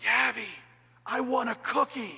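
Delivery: loud whisper meant to be overheard. Retelling what Riley would say when Yabby came home from school: Riley's loud whisper. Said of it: "in her loud whisper voice".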